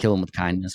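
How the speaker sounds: usual speaking voice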